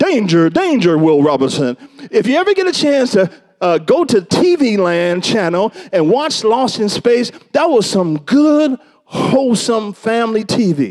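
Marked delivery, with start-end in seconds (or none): 0.0-1.8 mechanical sci-fi robot voice, alarm-like. Quoting the robot from Lost in Space warning of danger: Lost in Space robot voice. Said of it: "the robot would say".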